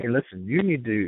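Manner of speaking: ordinary talk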